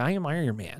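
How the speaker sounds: laid-back surfer delivery. Joking about how Robert Downey Jr. talks, do a Robert Downey Jr. surfer dude voice. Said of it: "that same sort of like surfer dude right. voice".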